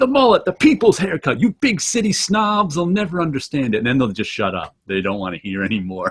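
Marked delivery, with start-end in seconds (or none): 0.0-3.8 mock, full-throated, high-pitched yelling outburst. Retelling what they yell when friends mock their mullet, recreating own yelling. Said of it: "I just start yelling".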